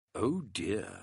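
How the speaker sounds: very prim, proper, disapproving. A pompous physician reacts to the narrator's broken ankle, very prim. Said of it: "he said in a very prim voice".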